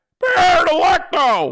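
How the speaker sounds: very high, loud, hollered yelling shout. Speaker shows off his Wheels impersonation, doing Wheels yelling impression. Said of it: "That's my Wheels".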